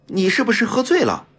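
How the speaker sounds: fake puzzled tone. A questioned man, startled but steadying himself, feigning bewilderment. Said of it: "装作一副莫名其妙的样子说".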